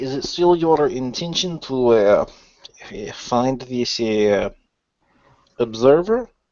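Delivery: voice brought down low and quiet. A character in a group role-play asks another a question, in a lowered voice. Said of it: "I'll kind of lower my voice".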